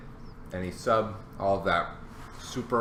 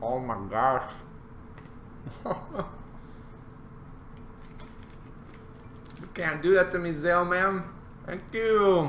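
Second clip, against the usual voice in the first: chewing while speaking, pitched up, mouth full; 9 semitones higher than usual. Thanking a supporter, talking with a mouthful of burger. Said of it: "I got a mouthful of burger".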